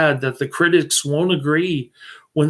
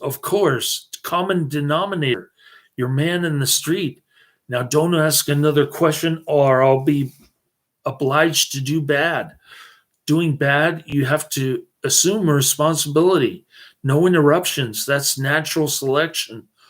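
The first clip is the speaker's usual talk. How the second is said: ordinary talk, nothing marked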